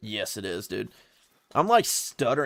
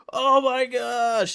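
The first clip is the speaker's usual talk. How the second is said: high, slow, shocked exclamation. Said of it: "I was like".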